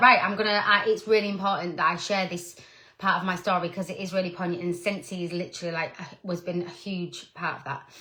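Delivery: ordinary delivery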